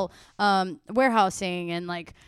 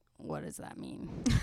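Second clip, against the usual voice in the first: slow, hushed, barely-there whisper; 19 dB quieter than usual. Retelling a question to Max about the numbers: imitating a past whisper. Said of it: "I was whispering to Max".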